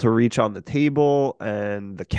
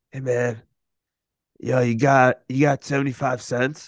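intoxicated, spaced-out voice. Speaker retelling a man who approached him at the train station, imitating a wasted guy. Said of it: "i sounded like he was fucked up".

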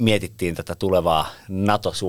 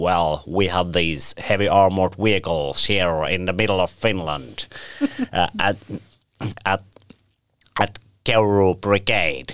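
thick, broad put-on Texan English accent. Retelling how someone planned to speak English at NATO, in a broad Texan English accent. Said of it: "tämmöisellä teksasilaisella Englannilla".

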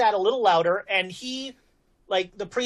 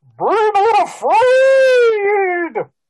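very high, very loud, blaring trumpet-like cry; 11 semitones higher, 11 dB louder than usual. Voicing an angel speaking to a player: voice like trumpeting elephants. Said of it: "it sounds like the trumpeting of elephants".

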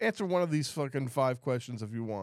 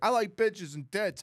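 put-on high, drunken hollering voice; 9 semitones higher than usual. Describing a drunk cab driver, imitating him yelling at people in the street. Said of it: "like yelling at people in the street".

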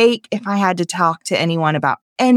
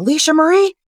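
mock, very high-pitched, stern calling, faking anger; 10 semitones higher than usual. Retelling how a parent called a child in, imitating an angry call. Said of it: "call me in with this tone, as if he were mad at me".

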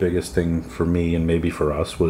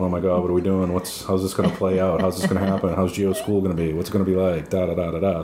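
ordinary talk

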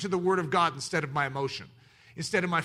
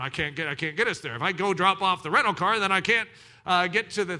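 frantic, flustered, panicked, words tripping over each other; 3 dB louder than usual. Retelling a traffic jam on the drive, imitating a panicked dad. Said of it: "my dad was now panicked as he's driving down the road in our rental car going".

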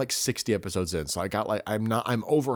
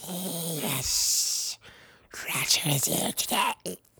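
high, creepy, pitched-up creature voice; 8 semitones higher than usual. Imagining a father with two personalities, the speaker voices one answering his kids: Smeagol voice. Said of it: "That was Smeagol".

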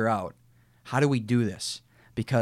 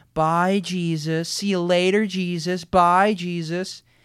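mock sneering, much higher, louder, slower; 8 semitones higher, 5 dB louder than usual. Describing students waving at a boy dressed as jesus, imitating sneering, mocking students. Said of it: "in a sneering, mocking tone".

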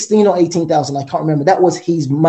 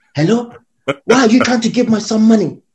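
put-on Nigerian accent, higher pitch; 5 semitones higher than usual. Son retelling his mom's phone call, in a nigerian accent. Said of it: "she said in a Nigerian accent".

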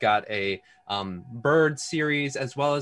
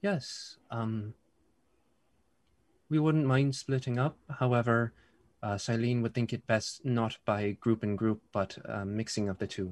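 soft-spoken, very quiet, very soft delivery; 4 dB quieter than usual. Narrating a psychic message from Bracken to the players: Bracken's very soft voice. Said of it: "very soft voice saying".

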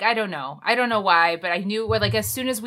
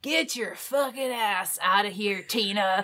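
put-on Northern Virginia accent with Chicago A sounds; 3 dB quieter than usual. Retelling a man busting into a cafe and addressing Tina, in a Northern Virginia accent. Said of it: "That was my Northern Virginia accent".

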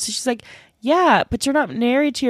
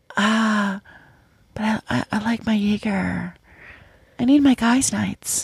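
mock whisper, slower pace. Retelling a man's reply after being scolded, imitating him whispering. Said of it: "And then he whispers".

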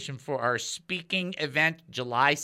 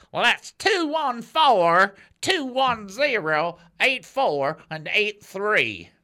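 put-on Texas twang, higher and louder; 5 semitones higher, 7 dB louder than usual. Repeating a phone number, trying it out in a Texas twang. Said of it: "I'm going to try that in a Texas twang".

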